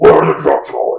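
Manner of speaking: low, loud growl. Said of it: "his Batman voice".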